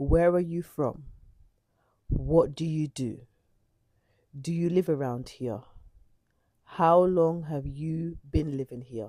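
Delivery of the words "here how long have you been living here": ordinary talk, nothing marked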